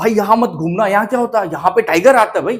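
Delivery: fearful, uneasy, frightened, anxious tone. Demonstrating a line spoken with fear: frightened, anxious warning. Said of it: "अब डर के साथ बोलते हैं".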